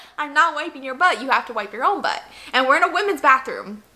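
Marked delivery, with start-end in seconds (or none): none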